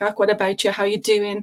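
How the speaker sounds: strong, thick Irish brogue. Recalling talking to yorkshire people at an insurance job, thick irish accent. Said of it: "I had a really thick Irish accent".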